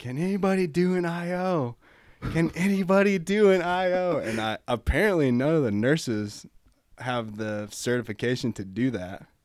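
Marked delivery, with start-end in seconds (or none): 0.0-4.2 slow, urgent, high, drawn-out yell. A paramedic intern retells a doctor calling out to the staff, retelling a doctor yelling. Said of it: "the doctor just starts yelling like".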